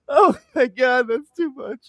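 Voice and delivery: talking through laughter. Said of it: "I can't stop laughing".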